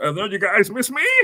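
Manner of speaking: high-pitched, froggy put-on voice. Imitating how Nia Jax sounds in her promo: Nia Jax impression. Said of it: "That's what she sounds like".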